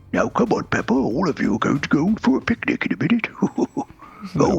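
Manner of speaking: high sing-song cartoon voice. On a Christmas episode doing Peppa Pig impressions, Daddy Pig voice. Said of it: "be Daddy Pig for me".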